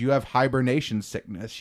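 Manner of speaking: ordinary talk, nothing marked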